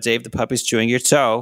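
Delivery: ordinary delivery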